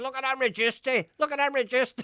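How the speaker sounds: very high, loud, marvellous showpiece proclaiming voice. Retelling what an actor said on the street, imitating Mark Mulholland. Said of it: "He says".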